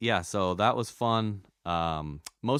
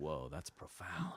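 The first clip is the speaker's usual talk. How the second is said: low, soft, slow mock awed narrator voice. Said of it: "you're like".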